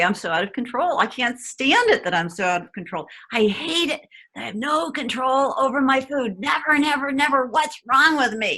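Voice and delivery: angry rant. Showing how quickly to express emotions about losing control of food, demonstrating anger. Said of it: "I feel angry".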